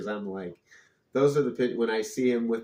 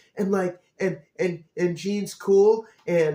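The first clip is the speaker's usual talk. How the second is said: put-on very high, loud, rambling little-kid babble; 9 semitones higher, 6 dB louder than usual. Imagining teleporting into a little kid to give the answers, talking like a six-year-old. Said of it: "I'd be talking like a six year old".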